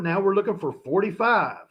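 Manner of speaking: forty-five said with a strong country accent. Announcing the next coin grade being looked for: sounding very country. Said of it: "I sounded very country when I said".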